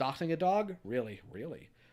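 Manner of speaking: plain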